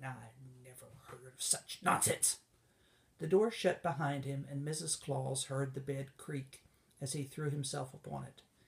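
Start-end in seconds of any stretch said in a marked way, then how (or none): 0.0-2.4 indignant muttering, lower pitch. Heading off to his room for a nap, he goes, indignant muttering.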